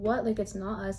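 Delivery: ordinary talk, nothing marked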